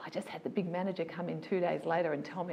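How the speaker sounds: ordinary talk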